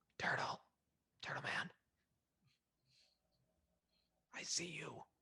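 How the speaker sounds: soft, hushed, coaxing whisper, barely voiced. In a game, whispering to turtle man so as not to wake anyone; whispering. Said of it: "I'm gonna whisper to it".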